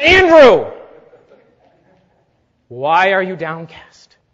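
severe, strict, scolding tone. Speaker demonstrating how to address himself by name: severe self-rebuke. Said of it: "You've got to be severe with yourself".

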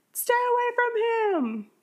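mock shrill, very high-pitched, drawn-out scream. Retelling a scene where she answers a ringing phone: imitating a scream. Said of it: "and then she screams, like".

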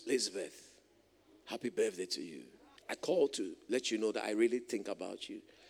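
very deep, low, hushed, soft baritone voice. Imitating a birthday caller phoning at 4 a.m., in a baritone voice. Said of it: "with a baritone voice".

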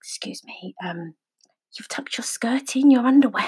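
hushed, quiet, deadpan, polite delivery. Retelling what an elderly woman quietly told her: imitating a quiet, dead-straight remark. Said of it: "she came over really quietly and dead straight".

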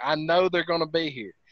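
ordinary delivery

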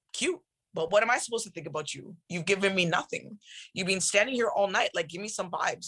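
plain

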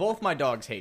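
ordinary talk

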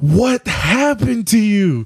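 mock outburst, very high, loud and drawn-out. Retelling how a girl on the bus asked about the bloody nose: imitating someone asking loudly. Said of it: "all loud and shit".

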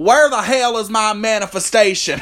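put-on very thick, heavy Southern accent, high-pitched. Speaker pictures a very southern person asking a question: thick Southern accent. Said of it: "a very thick southern accent who says".

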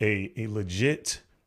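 plain

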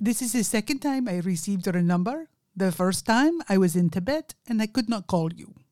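put-on strong Indian accent. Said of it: "he has a very strong Indian accent".

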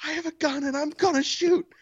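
shrill, very high-pitched yelling voice. Retelling how a neighbor threatened through the house: imitating someone yelling. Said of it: "she yells".

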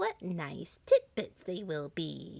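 mumbled, muttered half under the breath. Standing by the sleeping children's beds, she mutters to herself. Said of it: "she muttered to herself".

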